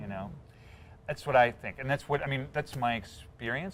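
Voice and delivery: ordinary delivery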